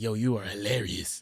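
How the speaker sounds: low, laid-back, casual voice. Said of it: "That's how he talked".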